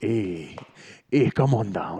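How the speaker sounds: put-on slow, drawn-out Jamaican accent. Imitating a character from a film for another speaker: Live and Let Die Jamaican accent. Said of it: "That's Jamaican".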